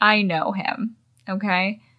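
usual speaking voice

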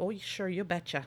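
put-on Minnesota accent. Admitting to being bad at accents, then doing a bad Fargo Minnesota accent. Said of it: "slip into a Minnesota accent".

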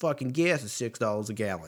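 put-on Boston accent. Ranting speaker says his line again in a bad Boston accent. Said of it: "That was a bad impression".

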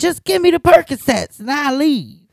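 high, put-on, screaming, demanding yell. Retelling a pharmacy visit where a man demanded pills: imitating a man screaming. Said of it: "a man in there just screaming".

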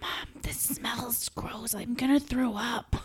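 put-on hushed, high-pitched childish whisper. Retelling whispering to mom at a dinner as a kid: imitating a child's whisper. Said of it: "And then I would whisper".

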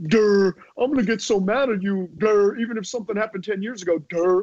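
high, taunting, put-on mocking durr voice. Retelling a comedian's stand-up bit about his audience, retelling a mocking impression. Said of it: "doing the impressions where he's like".

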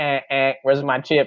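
high, halting, put-on robot voice with stutters. Imagining the robot asking for its chip: put-on robot voice. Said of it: "And he's like".

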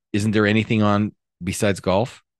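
ordinary talk

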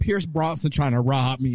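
usual speaking voice

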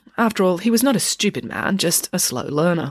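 ordinary talk

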